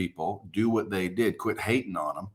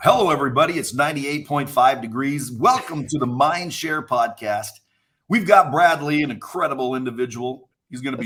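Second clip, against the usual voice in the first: pitched-up, on-air radio DJ voice; 5 semitones higher than usual. Telling a podcast guest his voice sounds like a DJ, then doing a radio DJ voice. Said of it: "your your voice sounds like a D J".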